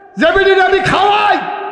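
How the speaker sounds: high, loud indignant shout.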